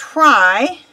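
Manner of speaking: stress on the word "try". Host introducing today's episode to viewers, stressing the word 'try'. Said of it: "and emphasize the word try".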